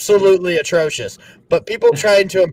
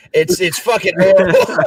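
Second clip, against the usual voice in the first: ordinary talk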